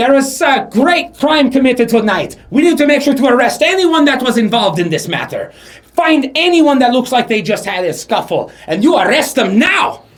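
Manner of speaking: very loud, very high, commanding shout. A game narrator voices a figure shouting orders to the guards. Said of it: "what looks like he's shouting".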